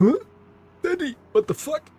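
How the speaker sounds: high-pitched dog voice. Joking about the barking dog, voicing the dog. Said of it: "The dog was just like".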